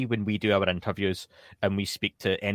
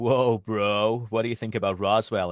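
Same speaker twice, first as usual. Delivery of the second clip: clumsy, badly done, put-on American accent. Speaker mocking the questions while talking to Dan, in a put-on American accent. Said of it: "apologies for anyone for my American accents".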